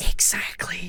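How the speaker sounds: whispered exactly.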